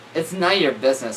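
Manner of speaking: ordinary talk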